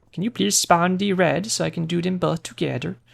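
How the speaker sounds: fake Swedish man accent. During a game, the speaker makes a request in a put-on Swedish accent. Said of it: "my impression of me when I do an impression of a Swedish man".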